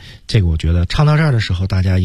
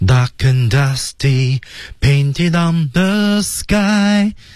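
pitch rising upward on the word sky; 9 semitones higher than usual. English intonation lesson, reading the line with pitch rising on sky. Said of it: "到sky 的位置，音调拉高向上。".

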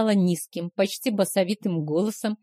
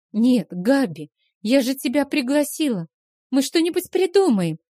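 high, prattling, halting, babbling chatter; 5 semitones higher than usual. Stacy replies to her friend Gabi, babbling. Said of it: "залепетала Стэйси".

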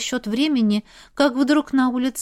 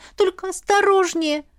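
begging, imploring, pleading, pitched-up voice; 7 semitones higher than usual. Ila pleads with the heroine as she goes out to look; pleading. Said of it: "взмолилась Ила".

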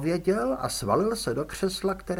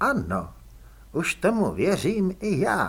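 plain

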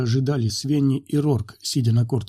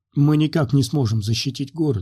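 ordinary delivery, nothing marked

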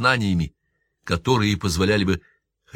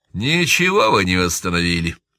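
scornfully dismissive, disdainful tone; 3 dB louder than usual. Pidgy answers the speaker's claim about the church, dismissive retort. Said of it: "пренебрежительно бросил Пиджи".

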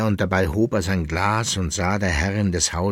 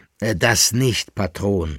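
usual speaking voice

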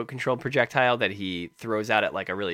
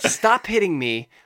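mock angry voice, higher and louder; 8 semitones higher, 5 dB louder than usual. Retelling other players ganging up in a match: imitating angry players. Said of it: "they all just get angry".

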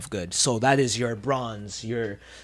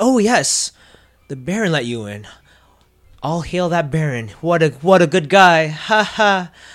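forced, fake, put-on cheerful tone; 6 semitones higher, 8 dB louder than usual. Voicing a nervous townsperson quickly praising the baron: forced cheerful tone. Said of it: "fake smiles all around".

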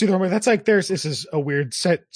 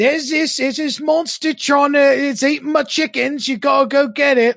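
put-on very high-pitched old lady voice; 9 semitones higher, 5 dB louder than usual. Describing a game quest, the speaker imitates the old woman quest-giver's voice. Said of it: "that's her actual voice".

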